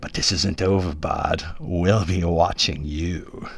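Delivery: slow, spat out through the teeth, threatening. Narrator reads the cloaked leader's parting words to Bard, spat threat.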